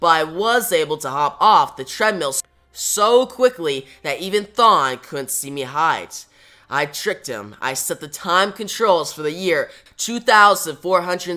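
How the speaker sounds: usual speaking voice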